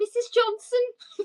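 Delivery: high, slow, deliberately bad Scouse accent.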